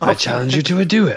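put-on high French cartoon villain accent. Joking that a man on screen looks like a cartoon villain: French cartoon villain voice. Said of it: "like a French villain in a cartoon".

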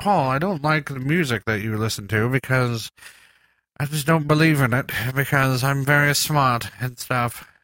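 put-on woman's character voice. Showing how she tears apart what Paul likes, do a Cat impersonation. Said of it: "That was my cat impersonation".

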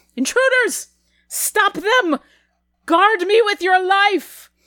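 very high, commanding, loud call-out. Narrating a scene, a woman spots intruders and starts calling out. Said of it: "as she calls out".

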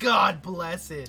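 very loud pissed-off outburst. Retelling what someone says when pissed off: imitating someone pissed off. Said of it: "he gets pissed off, he'll be like".

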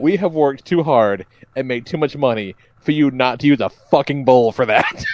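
normal talking voice

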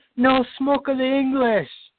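piercing, shrill, very high-pitched shriek. Joking about what someone would have done, mock screaming. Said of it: "I would have got out of the car screaming".

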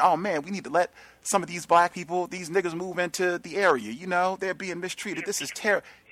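high-pitched, sanctimonious mocking voice.

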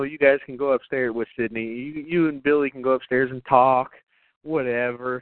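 ordinary talk, nothing marked

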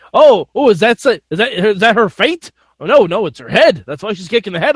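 on-air commentator announcer voice. Retelling how the announcers misheard a wrestler's word: imitating the announcers. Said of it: "they tried to, uh, say".

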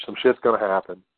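ordinary talk, nothing marked

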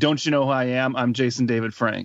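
ordinary talk

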